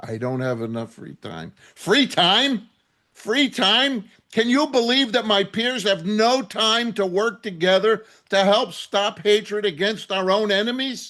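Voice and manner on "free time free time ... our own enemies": angry, exasperated and irritated. Answering Eli before an audience, angry. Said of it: "You see why I'm so angry".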